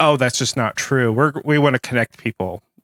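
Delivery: normal talking voice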